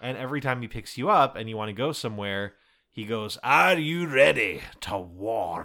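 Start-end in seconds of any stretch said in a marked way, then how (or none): 3.4-5.7 loud, very slow, drawn-out Scottish brogue. Quoting a game character who asks before every warp: deep scottish accent. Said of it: "like a Shrek, but several semitones deeper Scottish accent".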